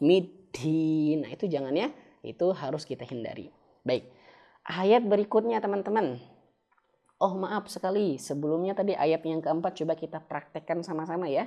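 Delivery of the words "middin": louder, airy, mispronounced puff on "dal". Showing learners the mistake to avoid: breathy dal, wrong. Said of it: "ada angin, ada hamesnya".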